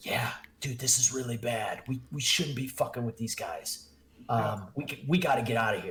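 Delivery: hushed, muttered speech. A game master voices Ismark speaking to the player; Ismark muttering under breath. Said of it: "under his breath".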